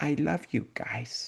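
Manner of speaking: gentle, soft, hushed voice. Retelling what a woman said to everyone, in a soft voice. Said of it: "She said in a soft voice".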